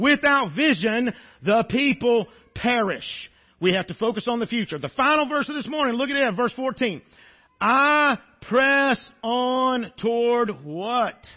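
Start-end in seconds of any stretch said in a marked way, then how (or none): 7.6-11.1 very slow, deliberate, spelled-out delivery. Preacher reads the final verse aloud to the congregation, very slowly. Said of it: "I said that a lot slower".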